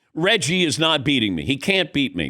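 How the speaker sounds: normal talking voice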